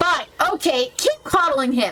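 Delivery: flustered voice, called back. Voicing a flustered character leaving a store: flustered shouting. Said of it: "A flustered Kanika exits, shouting behind her".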